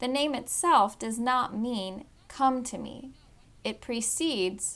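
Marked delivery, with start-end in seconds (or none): none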